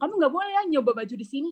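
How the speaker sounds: play-acted curt, dismissive tone. Retelling how a person spoke to them about their skin, imitating a curt, snippy tone. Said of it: "langsung ngomong dengan nada ketus kayak".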